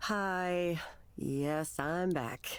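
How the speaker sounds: reluctant, unwilling, unhappy tone. Answering a welcome back, not happy to be here. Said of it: "She does not sound happy to be here".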